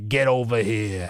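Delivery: New Jersey accent. Podcast host signing off and asking listeners for ratings, in a Jersey accent. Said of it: "That was my Jersey accent version".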